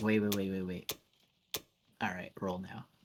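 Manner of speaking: quiet murmur.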